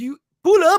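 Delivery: very loud, high, put-on French accent. Describing a film scene where a man slams the car door, French accent. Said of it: "like with the French accent".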